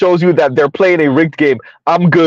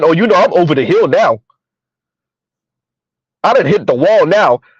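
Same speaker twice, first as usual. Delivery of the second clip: dry, sarcastic, mock self-pitying tone. Retelling how Yanni joked about turning thirty: imitating Yanni being sarcastic. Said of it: "trying to be sarcastic with the men".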